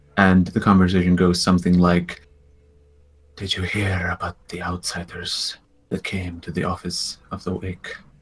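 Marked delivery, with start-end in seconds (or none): 3.4-8.0 hushed half-whisper, very soft. Narrator voicing two robed figures half-whispering to each other, in a hushed half-whisper. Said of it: "you can hear them whispering amongst each other".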